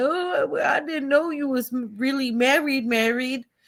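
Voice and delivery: put-on tearful sobbing with stammering protest. Retelling what Summer Bunny said on there: imitating Summer Bunny fake crying. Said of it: "she was on there fake crying, like".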